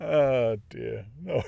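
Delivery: silly voice, words breaking into laughter. Reading aloud, after making himself laugh with a voice, laughing while talking. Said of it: "Made myself laugh with a stupid voice".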